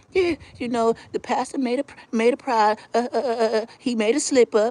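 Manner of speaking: syrupy sweet tone. Retelling how a church mother tells everybody about the pastor: imitating a sweet old church lady. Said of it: "with the sweetest voice".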